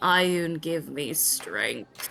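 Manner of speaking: very slow, dragged-out, low mutter. Voicing Rhea sitting down while chaos unfolds: muttered under her breath. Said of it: "under her breath you hear".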